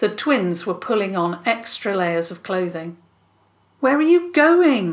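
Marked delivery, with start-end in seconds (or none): 3.8-4.9 insistent, demanding, raised and high voice. Ella confronts the twins as they pull on extra layers, demanding. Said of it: "Ella demanded".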